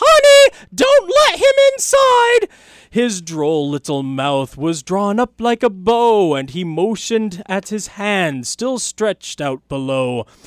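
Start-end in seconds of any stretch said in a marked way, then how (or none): 0.0-2.5 very high, loud yell. The narrator's wife calls to him about the visitor, yelling out. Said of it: "My wife yelled out".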